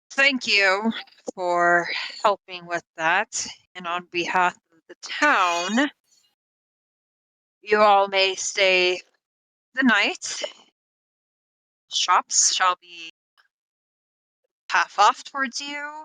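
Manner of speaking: reluctant, grumpy grumbling, "town" drawn out. Game master voices the grumpy mayor addressing the party, grumbling. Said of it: "he's kind of grumbling to himself".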